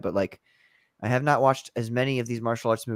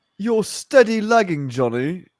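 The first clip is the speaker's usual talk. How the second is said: slow, high, drawn-out mocking character voice; 7 semitones higher than usual. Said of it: "That's my Mister Self-Destruct voice".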